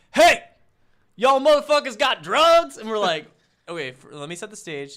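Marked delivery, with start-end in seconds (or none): 0.1-2.7 very loud, shrill, high, angry tough-guy bark.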